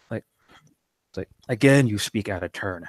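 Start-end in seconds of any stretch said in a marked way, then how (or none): 1.9-2.9 harsh, rough character voice. Storyteller voicing Kadir's reply to someone in the story, harsh tone. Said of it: "And Kadir will say in a harsh tone".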